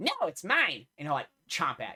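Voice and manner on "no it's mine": high, tiny, possessive-sounding dragon character voice. Voicing a tiny dragon snapping at a player reaching for its gold: tiny dragon voice. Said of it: "the tiny dragon will ... be like".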